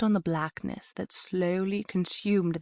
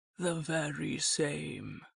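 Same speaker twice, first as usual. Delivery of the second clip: soft, hushed, rasping wolf voice; 2 semitones lower, 6 dB quieter than usual. Reading a story; the wolf answers from outside the shack, rasping Big Bad voice. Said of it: "came a rasping cry from outside".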